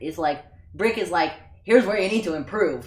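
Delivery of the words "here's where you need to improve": very gruff, harsh voice. Contrasting Brick with Yoda as leaders, the speaker voices Brick: gruff, harsh Brick voice. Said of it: "in a very gruff, harsh voice".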